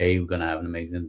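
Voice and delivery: flat, dead-level delivery with no tune. Explaining tonality, the speaker shows how the conversation would sound very monotone. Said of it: "on a very monotone".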